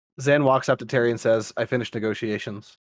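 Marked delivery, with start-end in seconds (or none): 1.6-2.8 totally flat, expressionless, serious deadpan monotone. A narrator voicing Zan as he walks up to Terry, deadpan monotone. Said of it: "Totally deadpan, monotone, serious look".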